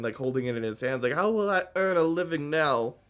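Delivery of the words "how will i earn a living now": weeping, tearful, crying lament. Voicing a character picking up broken pieces on his knees: crying character. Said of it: "is crying".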